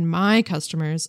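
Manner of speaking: usual speaking voice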